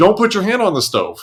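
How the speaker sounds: play-acted, alarmed scream. Acting out warning a toddler away from the stove: acting out a scream. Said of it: "you're screaming".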